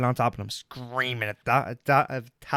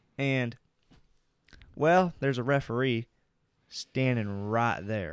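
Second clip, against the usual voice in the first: fake southern accent, held throughout. Telling a story about trash talk during a game, in a fake southern accent. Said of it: "Quit with the southern accent".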